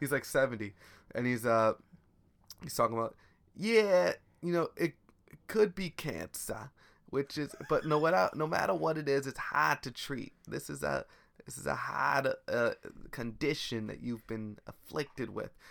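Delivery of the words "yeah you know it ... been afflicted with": put-on broad, thick Boston accent, laid on. Imitating a hospital department head with a thick boston accent: thick boston accent. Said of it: "has a thick Boston accent".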